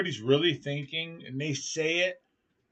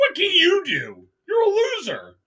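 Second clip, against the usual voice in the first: very high, rude, shrill, swooping, dismissive tone; 13 semitones higher, 6 dB louder than usual. Retelling what Debbie said while waiting, imitating Debbie, totally rude. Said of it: "I didn't say it like that".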